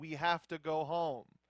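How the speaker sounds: plain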